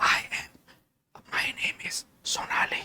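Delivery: voiceless, very hushed, very soft, slow whisper. Demonstrating how a patient with sudden aphonia speaks: voiceless whisper. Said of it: "she communicates to us with whisper".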